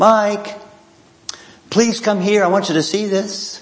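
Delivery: sweet, high little voice. Retelling how she called up the stairs to him, imitating a sweet little voice. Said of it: "her sweet little voice".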